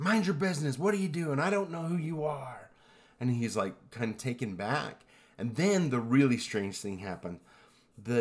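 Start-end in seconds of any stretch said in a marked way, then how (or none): 0.0-2.7 high-pitched yelling. Retelling how a brother-in-law yelled from his car: imitating someone yelling. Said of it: "his brother-in-law just yells at him".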